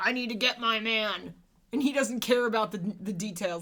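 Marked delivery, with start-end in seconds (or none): 0.0-1.3 put-on barking grunt voice. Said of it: "He's a grunt, basically".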